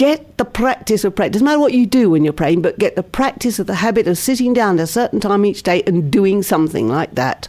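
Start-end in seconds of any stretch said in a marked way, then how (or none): none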